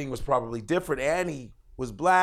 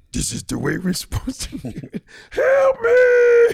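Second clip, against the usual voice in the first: very high, shrill, very loud voice swooping around; 10 dB louder than usual. Showing another speaker a Grover voice. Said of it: "It's a great Grover".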